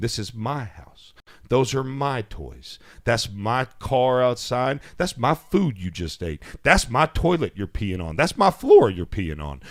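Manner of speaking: stern, no-nonsense, dead-serious delivery. A parent retells what he told his boy after flipping the light on, retelling a dead-serious talk. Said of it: "I flipped that light on like serious as a heart attack".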